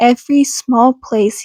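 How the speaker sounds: ordinary delivery, nothing marked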